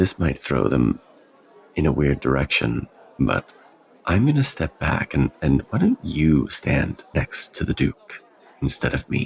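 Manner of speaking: stage whisper, in character. Voicing a character who leans down to another character: whispering in character. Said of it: "she whispers".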